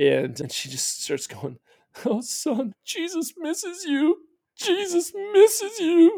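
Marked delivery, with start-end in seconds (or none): 2.0-6.2 mock very high, slow, weepy, tearful blubbering. Retelling a mother's tearful words to her son: imitating someone crying and blubbering. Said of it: "crying and blubbering about how Jesus misses me".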